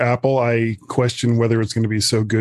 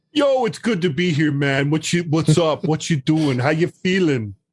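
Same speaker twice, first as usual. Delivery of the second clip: botched New York beach accent, pitched up; 5 semitones higher than usual. Back on the show, greeting the host in a bad New York beach accent. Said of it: "that's bad New York beach accent".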